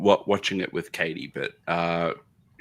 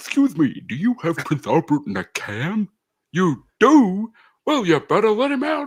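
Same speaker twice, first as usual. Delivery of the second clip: shrill, swooping, high and loud heckling clown voice; 13 semitones higher, 7 dB louder than usual. Retelling a scene to another speaker, a Pennywise impression taunting. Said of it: "Pennywise is up on the mezzanine and he's just, like, talking shit. And he's like".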